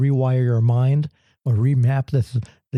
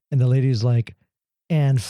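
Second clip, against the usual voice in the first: normal talking voice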